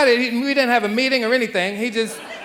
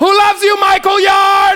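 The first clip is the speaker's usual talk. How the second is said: mock yelling, higher and louder; 10 semitones higher, 8 dB louder than usual. Retelling shouting to a son from the car window: retelling yelling out a car window. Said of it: "I just start yelling out the car window".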